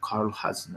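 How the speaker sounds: very quiet, hushed whisper. Voicing a character who echoes back a name: very quiet. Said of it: "he would just very quietly say".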